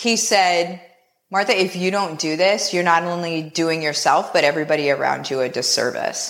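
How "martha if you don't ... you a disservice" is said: put-on deadpan, straight-faced delivery, lower. Retelling his reply to hearing about quitting the job: imitating a deadpan delivery. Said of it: "with the straightest face ever".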